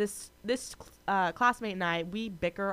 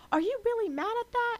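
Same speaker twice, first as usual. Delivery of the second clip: super defensive, pitch jumped up an octave; 3 dB louder than usual. Retelling an argument, imitating someone getting super defensive. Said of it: "super defensive, her voice goes, like, an octave higher".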